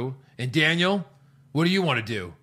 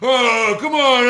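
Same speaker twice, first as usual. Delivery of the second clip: loud booing-crowd voice; 10 semitones higher, 9 dB louder than usual. Showing how a fake crowd boos, imitating a booing crowd voice. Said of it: "you do that voice, and it sounds like boo".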